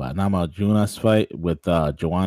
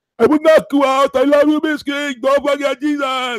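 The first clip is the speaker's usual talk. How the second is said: put-on loud, high-pitched Cuban accent; 7 dB louder than usual. Recalling a fighter's feud with Michael Bisping, the speaker does a Yoel Romero impersonation. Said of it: "That's my Yoel Romero impersonation".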